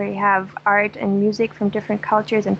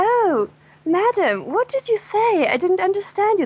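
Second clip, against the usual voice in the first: put-on very posh, proper German accent, pitched very high; 10 semitones higher than usual. Retelling a man's reply to an old woman at her window, in very posh German. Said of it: "Like in very posh German".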